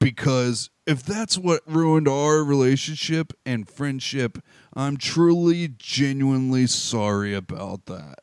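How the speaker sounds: slow, very apologetic put-on voice.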